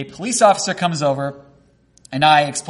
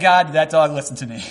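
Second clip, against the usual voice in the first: plain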